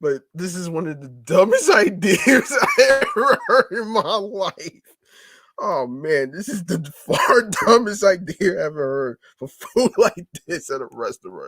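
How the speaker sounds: laughing through the words. Reacting to a news report, laughing while talking. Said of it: "I'm sorry for laughing".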